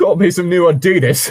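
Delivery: laid-on English regional accent, loud and high. Imitating the accent the other reader just used: imitating an English regional accent. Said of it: "It's like".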